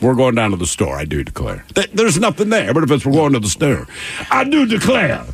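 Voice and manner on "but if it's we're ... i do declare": emphatic cartoon rooster voice. Showing how "I do declare" has to be said, emphatic Foghorn Leghorn voice. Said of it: "there's some emphasis".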